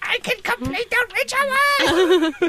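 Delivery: very high, slow, stretched-out cartoon villain voice. Player redoing the cobra's line in a game scene, Cobra Commander voice. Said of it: "Cobra's supposed to sound like Cobra Commander".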